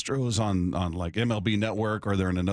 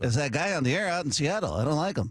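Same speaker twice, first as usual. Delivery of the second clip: tiny, high, small, squeaky little voice; 6 semitones higher than usual. Imagining what a man would say about him on air, in a little person voice. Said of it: "It's a little person voice".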